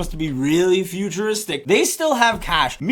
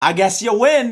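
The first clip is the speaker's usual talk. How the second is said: mock-sarcastic, acted-out delivery; 2 semitones higher than usual. Retelling a heist scene, acting out a woman's reply to the police: retelling a sarcastic line. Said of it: "the Mandalorian lady sarcastically is like".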